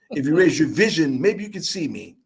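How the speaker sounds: plain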